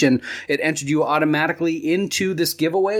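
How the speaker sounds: normal talking voice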